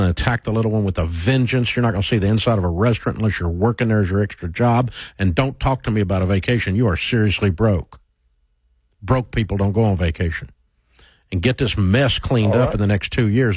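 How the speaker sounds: usual speaking voice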